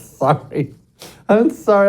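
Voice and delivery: words broken up by laughter throughout. Apologizing for laughing before introducing a guest: laughing while talking. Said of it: "I can't stop laughing about it".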